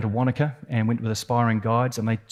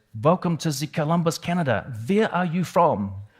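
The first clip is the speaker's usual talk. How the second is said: put-on pitched-up German accent; 5 semitones higher than usual. Retelling how the rescuing ship's German first mate greeted them: German accent. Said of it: "he said in his German accent".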